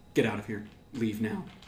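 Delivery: dead-serious, grave, very serious delivery. Voicing a character warning everyone over the phone: very serious. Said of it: "And it's very serious".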